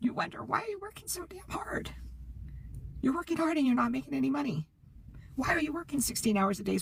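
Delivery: voice catching and choking up, close to crying. Pitching a work system to listeners, choking up, near tears. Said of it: "I'm sorry, I might cry".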